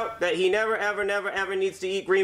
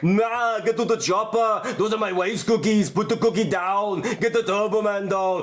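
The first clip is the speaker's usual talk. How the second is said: voice-changer movie star voice, slow and deliberate. Showing what a voice changer does: Arnold Schwarzenegger voice. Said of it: "you wanna be Arnold Schwarzenegger?".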